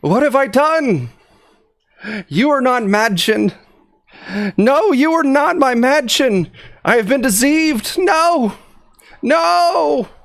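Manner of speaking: very high, anguished, despairing cry. In an acted scene, a character cries out in despair. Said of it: "cries out".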